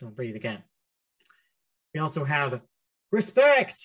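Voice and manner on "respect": shrill, very high, all-out shouting. Reading out a word written in all caps, shouted word 'Respect'. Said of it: "I say it like that because it's on all caps".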